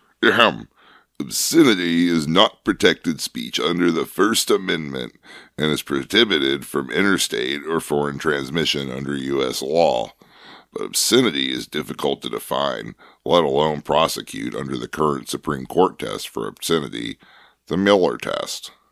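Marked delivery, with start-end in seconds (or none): none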